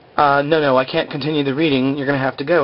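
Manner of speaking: plain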